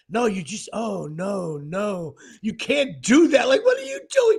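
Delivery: disapproving, fault-finding TV announcer, slow and swooping. Retelling how the announcers judged the shot: imitating critical announcers. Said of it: "they were so critical".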